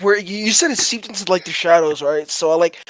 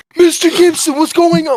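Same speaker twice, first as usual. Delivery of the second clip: freaked-out, frightened, high, loud panicked scream; 9 semitones higher, 5 dB louder than usual. Player in a game, freaked out by a shadow, calls out in a frightened scream. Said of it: "I'm like screaming because I'm like fucking freaked out".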